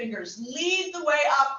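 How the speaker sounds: ordinary delivery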